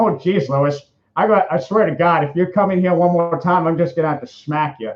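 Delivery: leaning hard into an exaggerated Boston accent. At a voice impersonation panel, the speaker demonstrates: Peter from Family Guy voice. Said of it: "accentuate it to kind of sound like I'm from Boston".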